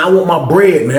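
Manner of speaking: normal talking voice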